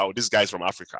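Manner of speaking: normal talking voice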